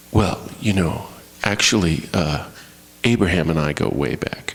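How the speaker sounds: mild, unruffled, gentle, very deep voice. Impersonating Jesus responding to hostility, as a quiet, gentle Jesus impression. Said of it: "this is my impersonation of Jesus in response to this hostility. You know, he's just so quiet and gentle".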